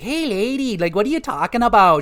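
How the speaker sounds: put-on Minnesota-Canada mixed accent. Describing how the giant clam character talks, doing a Scylla voice with a Minnesotan-Canadian accent. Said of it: "She sounds like a Minnesotan Canadian person".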